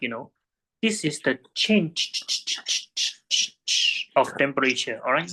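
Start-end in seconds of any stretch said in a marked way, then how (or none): 0.8-5.0 change emphasized. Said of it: "I need to stress this enough".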